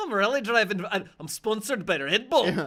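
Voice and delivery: bragging put-on Irish brogue, high and loud. Joining in quoting the film character's rally driver brag: imitating an Irish accent. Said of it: "He's an Irish guy".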